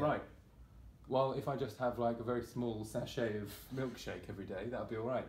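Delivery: plain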